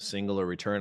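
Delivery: ordinary delivery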